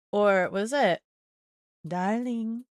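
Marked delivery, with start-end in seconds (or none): 1.8-2.6 mock sultry, seductive tone, higher pitch. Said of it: "I just can't be sultry".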